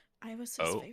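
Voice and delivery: voiced stage whisper. Voicing a character who leans in to another's ear: half-whispering in character. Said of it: "she leans in to whisper into your ear".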